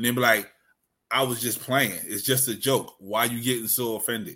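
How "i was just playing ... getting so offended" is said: plain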